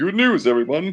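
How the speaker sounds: very high cartoon-character voice. Announcing a series of good news: Professor Farnsworth voice. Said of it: "like in the voice of Professor Farnsworth from Futurama".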